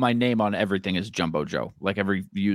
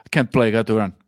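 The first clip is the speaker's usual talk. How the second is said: thick put-on Russian accent, louder; 2 semitones higher, 6 dB louder than usual. Joking that the marathon-running player is too busy: imitating Char, thick Russian accent. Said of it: "it's a very thick accent".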